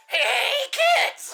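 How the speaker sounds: loud, put-on TV clown voice. Puzzling over a reference, a speaker breaks into a Binky the Clown voice. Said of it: "because Binky the Clown voice".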